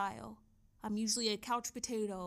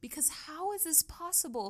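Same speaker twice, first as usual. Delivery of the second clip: awestruck, emotional, pitched-up amazed disbelief; 6 semitones higher than usual. Showing viewers how a tool builds a nutrition plan, amazed and emotional. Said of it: "I'm getting emotional and my jaw is dropped".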